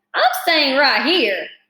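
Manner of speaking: complaining, grumbling rat voice. Narrator reading a story as the rat answers, grumbling Templeton the rat. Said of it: "grumbled the rat".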